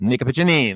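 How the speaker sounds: Italian-style pronunciation. Calling a fight round, saying the fighter's name like an Italian. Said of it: "I'm saying it like an Italian".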